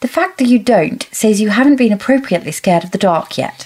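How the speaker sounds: put-on strong, pushed, very British accent. Reading Violet's line to Kat from the book, in Violet's very British accent. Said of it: "in a very British accent".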